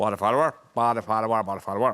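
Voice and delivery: put-on Northern Irish accent. Repeating a phrase a comedian taught for doing a Northern Irish accent. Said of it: "he taught me how to do a Northern Irish accent".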